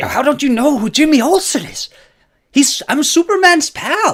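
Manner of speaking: mock very high, loud, angry scolding tirade. Retelling how a man angrily berated women who didn't know who he was: imitating angry berating. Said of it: "he's just berating these women like".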